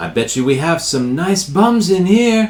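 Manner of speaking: high, acted, in-character yelling. Voicing a character who finds a door open and yells: yelling in character. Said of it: "he yells".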